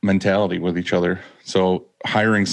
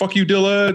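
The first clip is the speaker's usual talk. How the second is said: sudden, very high, shrill yell; 12 semitones higher than usual. Retelling how a former worker rode past the door: imitating someone yelling. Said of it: "he just yelled".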